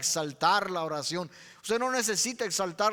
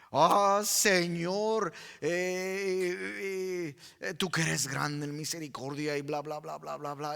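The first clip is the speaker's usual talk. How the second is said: stuffy, grandiose, formal praying tone, drawn-out "eh"; 3 semitones lower than usual. Mocking the formality in prayer: mock formal prayer. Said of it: "Es la formalidad".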